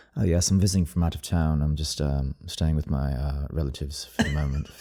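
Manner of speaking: low, mysterious sultry voice. Showing the others how you'd talk to people: mysterious, sexy voice. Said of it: "make it like all like mysterious".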